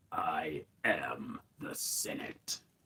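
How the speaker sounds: very slow, drawn-out whisper. Giving a brief line as Emperor Palpatine on request: Emperor Palpatine impression. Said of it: "Not my best impersonation".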